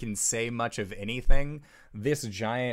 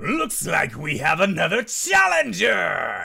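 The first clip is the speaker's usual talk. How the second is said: rough, animated, loud, creaky, swooping giant voice; 6 semitones higher, 7 dB louder than usual. Voicing a gargantuan shrouded figure as the crowd cheers: gargantuan shrouded figure's voice. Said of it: "from the direction of this gargantuan shrouded figure".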